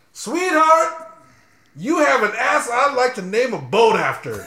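shrill, very high-pitched shout, heavy stress on ass. Reading a line aloud for the group, shouting the word 'ass'. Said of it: "says shout on it".

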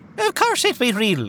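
heavy put-on Irish accent. A police officer answers a young woman, in a thick Irish accent. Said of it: "Is that Irish accent for real?".

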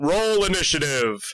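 loud, resonant voice. Narrating a game scene, voicing a voice from the sky, booming voice. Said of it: "as you hear a booming voice".

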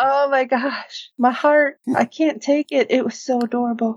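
Southern belle accent. Reacting to a moment in the story, suddenly going super Southern belle accent. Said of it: "went super Southern Belle there".

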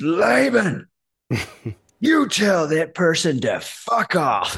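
slow, drawn-out mock scolding. Retelling what a coach yelled down the phone: imitating Steve Hardison yelling. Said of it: "yells down the phone".

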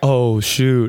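ordinary talk

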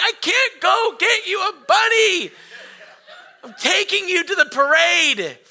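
high, loud, exasperated shout.

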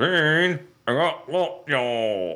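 words pushed through an unmoving mouth, clenched jaw. Retelling a bit the speaker and friends pretend together, talking without moving the mouth. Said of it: "We pretend that we won't move our mouth".

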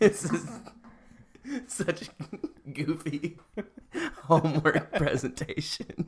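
high, very slow talking through giggles. Student giving a homework presentation: laughing while talking. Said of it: "I don't know why I'm laughing".

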